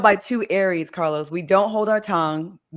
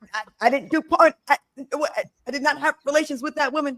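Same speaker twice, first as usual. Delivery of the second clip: high-pitched, halting stutter with stammered repeats; 7 semitones higher than usual. Catching himself stuttering and imitating Brittany: stuttering like Brittany. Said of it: "I'm stuttering like Brittany".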